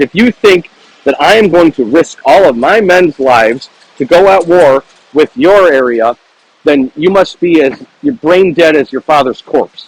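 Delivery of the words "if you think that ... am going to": ordinary delivery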